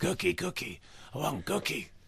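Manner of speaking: breathy, half-whispered puppet-like monster voice. After being told you sounded partly like him, do a Cookie Monster impression. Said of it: "I think that's your best impression so far".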